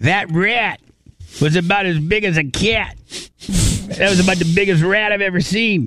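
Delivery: put-on New York accent. Imitating someone telling a story about a rat: imitating Greg D's New Yorker accent. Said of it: "That's not my Greg D impersonation".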